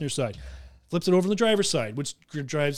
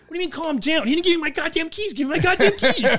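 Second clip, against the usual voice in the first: mock heated, worked-up agitation, much higher; 11 semitones higher, 3 dB louder than usual. Retelling arguing with a cop over swapped car keys, retelling a heated retort. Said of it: "The other cop comes over, calm down".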